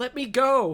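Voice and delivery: very loud, very high, pleading voice. Voicing a victim with a sickle at his neck: begging for his life. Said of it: "He starts begging for his life".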